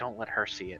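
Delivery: whispering in a character voice. Voicing a character who speaks to another as he turns to leave: in-character whisper. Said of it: "I'm gonna whisper to him as he turns to leave".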